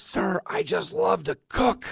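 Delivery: play-acted shrill, very high, rough, drawn-out raspy scream. Retelling how the contest winner ran up to him, imitating someone screaming. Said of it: "he's screaming in my face".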